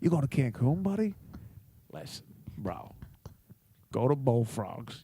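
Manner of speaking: breathy, hushed, whispered bro voice. Imitating a friend's restaurant recommendation: Scopo impression. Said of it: "this is my best Scopo impression".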